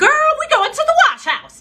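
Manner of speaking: shrill, very high, loud shriek. Quoting what their mom would say, imitating mom's high-pitched shrieking voice. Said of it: "She has this high pitched, shrieking voice".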